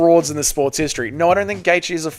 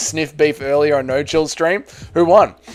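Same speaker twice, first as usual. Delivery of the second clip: normal talking voice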